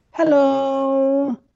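long, stretched put-on podcast host voice. Greeting like a podcast host opening the show: Don and Ellie impression. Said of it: "Is that your Don and Ellie impression?".

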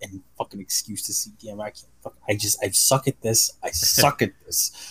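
mock muttering under breath. Retelling dragging their feet somewhere, retelling muttering under breath. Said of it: "I just keep under my breath".

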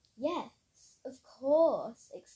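exclaimed at high volume. Asked if she was scared, Kira answers, exclaiming. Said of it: "exclaimed Kira".

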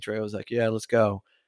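ordinary talk, nothing marked

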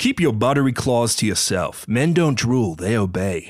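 put-on American accent leaning a bit Texan. Asked to read a script line, the speaker tries an american accent, a bit texan. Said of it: "May we hear your American accent?".

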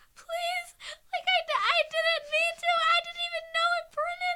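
very high, very loud tearful crying. Retelling pleading with a woman over a demerit: imitating own past crying plea. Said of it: "I was crying to this woman".

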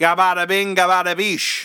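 attempted Boston accent, laid on thick. Opening tonight by trying out a put-on boston accent. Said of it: "We're trying to do a Boston accent".

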